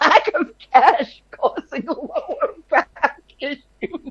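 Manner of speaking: laughing, slightly high voice. Reacting to the other speaker's claim: laughing while talking. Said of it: "I'm sorry that I'm laughing".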